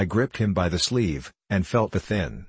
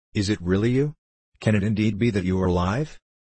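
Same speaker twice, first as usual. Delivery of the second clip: usual speaking voice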